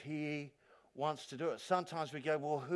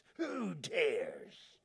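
talking like a pirate. Quoting a Bible verse to the congregation, joking: pirate voice. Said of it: "Talking like a pirate".

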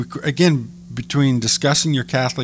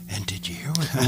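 hushed, quiet golf commentator delivery; 6 dB quieter than usual. Speaker shows how people talk about the sermon: golf announcer voice. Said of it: "We sound like a golf announcer".

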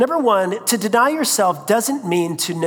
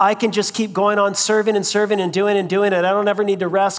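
normal talking voice

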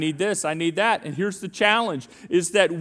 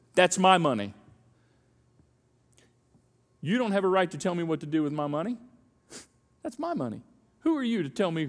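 put-on self-centered attitude; 4 dB quieter than usual. Acting out the voice of a me culture: imitating a self-centered attitude. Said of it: "And it sounds like this".

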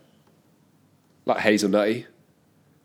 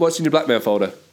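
usual speaking voice

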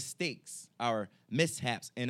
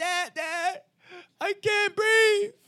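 put-on crying, pleading tone, much higher and louder; 8 dB louder than usual. Retelling running into dad's room with a stuffy nose: imitating crying. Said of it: "I was like, crying".

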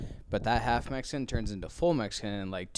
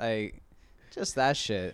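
ordinary talk, nothing marked

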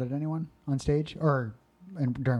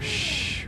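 shushing sound.

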